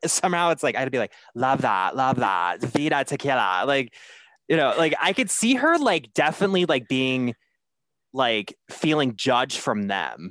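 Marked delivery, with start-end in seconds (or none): 1.3-3.6 put-on bossy housewife character voice. Showing a Lisa impression after imagining her reaction: Lisa impression. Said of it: "I can do a Lisa impression".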